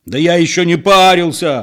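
slow, loud, drawn-out hollered outburst, rising in pitch. A usually calm man answers back, yelling. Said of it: "заорал спокойный Петро".

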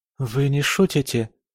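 unsteady, trembling, quavering voice. Narrator reads Lorraine's reply to the baroness: trembling voice. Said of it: "дрожащим голосом спросила Лоррейна".

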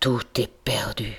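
low, dropped murmur under the breath. Philippe, after a voice orders them to open in the law's name: murmured.

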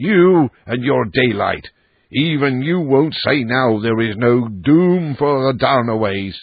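put-on old man voice crying out fiercely in anger. An old man starts awake and cries out at his listener: fierce angry cry. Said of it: "he cried".

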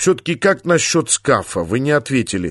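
plain reading voice

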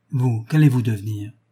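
ordinary delivery

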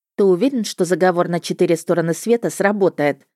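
ordinary delivery, nothing marked

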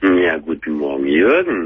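low, deep voice. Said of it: "Du hast aber eine tiefe Stimme".

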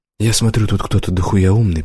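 ordinary delivery, nothing marked

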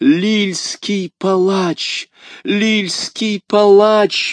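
very high, drawn-out shriek, mad with fear. A woman clings to the wall, recognizing the man in the red cloak: screaming, mad with fear. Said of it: "выкрикивала миледи, обезумев от страха".

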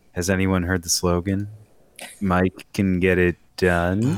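slow pace, odd inflection at the end. Retelling a commercial line, imitating Bloomberg's weird end inflection. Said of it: "got this weird voice inflection at the end".

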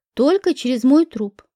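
ordinary delivery, nothing marked

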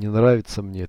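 plain reading voice

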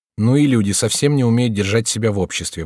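ordinary delivery

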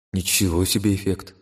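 plain

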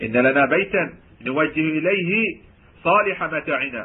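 forceful, stressed delivery.

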